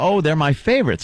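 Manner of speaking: sneering, sending-up voice. Retelling how a co-host keeps changing her point: imitating a co-host. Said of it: "like she goes".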